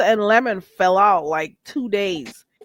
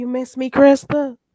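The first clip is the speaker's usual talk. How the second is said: imitated cute guy's voice; 4 semitones higher, 3 dB louder than usual. Retelling what a guy said in the chat, the speaker imitates Lemon's cute voice. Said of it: "Lemon's cute voice?".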